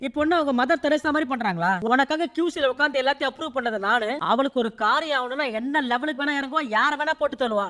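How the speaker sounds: ordinary delivery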